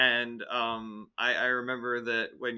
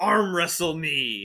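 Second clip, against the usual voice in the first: put-on, pitched-up, taunting and goading voice; 5 semitones higher, 4 dB louder than usual. Taunting an opponent in character before challenging him to arm wrestle. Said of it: "and I'm just like".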